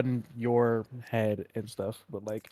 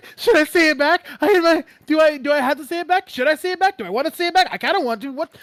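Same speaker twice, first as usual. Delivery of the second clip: acted, very high, loud, frantic freaking-out panic; 6 dB louder than usual. Retelling how a man reacts after Luna says the words, imitating him freaking out. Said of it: "He is freaking out".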